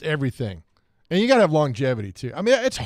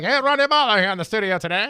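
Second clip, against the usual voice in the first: put-on old-timey 1930s voice, much higher; 6 semitones higher than usual. Suggesting a studio greeting for the other host to do, in an old 1930s voice. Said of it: "That nineteen thirties voice".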